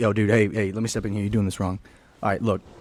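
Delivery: very low, deep big-guy gym-dude voice. Retelling how a big ripped dude stepped in: imitating a big ripped gym guy. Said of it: "this big rip dude comes up to us".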